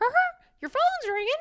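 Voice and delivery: pitched way up, cartoon-style voice. Describing a Mickey Mouse phone received as a gift, the speaker does a Mickey Mouse voice. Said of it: "That's your Mickey?".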